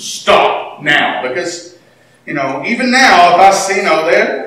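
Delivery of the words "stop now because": low, firm, stern fatherly tone. Showing the voice they use when pushed too far, the dad voice. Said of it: "That's why I use the dad voice".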